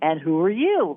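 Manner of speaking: light, lilting, sing-song delivery. Retelling what they asked a spiritual being: lilting voice, retelling own words. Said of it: "with a lilt in my voice".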